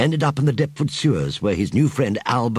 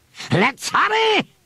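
urgent, impatient cry, very high pitch. Narrator reads a leader urging his followers to hurry: impatient cry. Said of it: "he cried impatiently".

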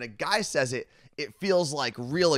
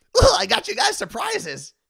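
very high, loud, rough, shrill, cracked-out mascot squeal; 8 dB louder than usual. Retelling a friend handing out surprises, imitating Carla Marie as cracked-out cereal mascot. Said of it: "like a cracked out Lucky Charms character".

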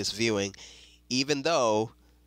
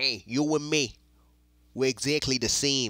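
put-on loosely done New York accent; 2 semitones higher than usual. Recapping a show trailer, quoting Kingpin to his former protege in Kingpin's New York accent. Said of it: "in that little New York accent that I can't really do".

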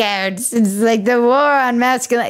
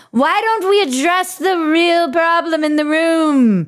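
put-on pitched-up old-fashioned voice, "room" drawn out; 5 semitones higher than usual. Discussing a serious problem with the others, in an old-timey voice. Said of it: "talk about pedophiles in a way that is old-timey".

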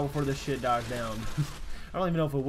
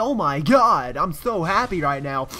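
exaggerated, grating, loud, slow fake-happy voice; 2 semitones higher, 8 dB louder than usual. Mocking what somebody is going to say in an annoying put-on voice. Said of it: "in an annoying voice like this".

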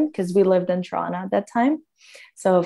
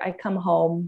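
plain

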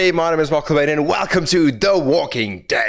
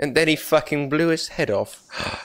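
usual speaking voice

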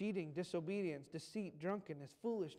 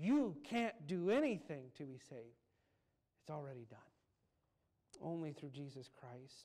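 mock heartfelt, passionate, fervent, earnest insistence; 3 semitones lower than usual. Retelling a man's reply to someone urgently asking, retelling with more passion. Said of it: "And with more passion".

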